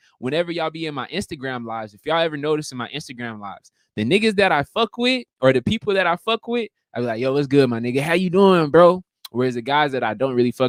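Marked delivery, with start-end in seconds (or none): 7.2-9.0 pumped-up, excited, hyped tone. Showing how they greet people they like on Instagram lives, with an excited greeting. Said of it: "I got that excitement in my fucking voice".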